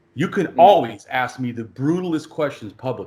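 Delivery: ordinary delivery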